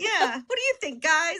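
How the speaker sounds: put-on very high, perky, bubbly girl voice, eager. Retelling walking into a studio session as a little bubbly girl: imitating own bubbly self. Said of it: "this little bubbly girl walking in like".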